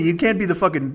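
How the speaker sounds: usual speaking voice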